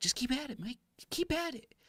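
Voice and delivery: very high, squeaky little voice. Mike retells what a man told him, imitating his squeakier voice. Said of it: "he has kind of like a, a little squeakier voice".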